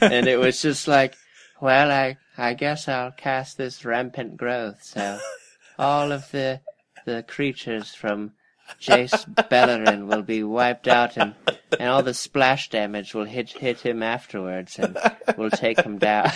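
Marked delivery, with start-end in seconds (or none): 1.6-16.3 weird cartoon voice with a more British sound. Redoing the voice used while reading cards in a game: Salad Fingers voice, more British. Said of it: "a mixture of Salad Fingers, that old weird cartoon, but, like, more British".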